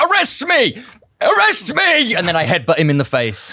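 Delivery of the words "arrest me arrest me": very high, very slow, drawn-out shriek. Playing a character who starts screaming at a taxi driver: screaming. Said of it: "I start screaming".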